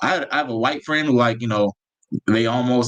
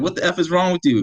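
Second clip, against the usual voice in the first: high-pitched, reined-in mock yelling; 6 semitones higher than usual. Retelling a confrontation while filming a man: imitating a man yelling. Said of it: "So he's yelling".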